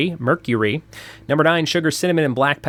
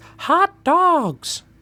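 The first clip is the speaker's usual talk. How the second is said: very high, squeaky cartoon voice; 14 semitones higher than usual. Counting down a list of facts, the speaker quotes a line in a Mickey Mouse voice. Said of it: "the first thing Mickey Mouse ever said was".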